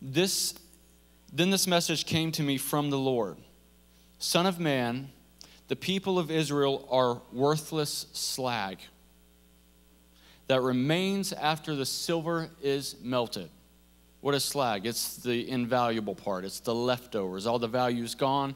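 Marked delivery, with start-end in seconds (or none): 0.0-13.5 slow, deliberate, unhurried reading, each word weighed. Reading a scripture passage aloud so it sinks in, reading slowly. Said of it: "I'm just gonna read it slow".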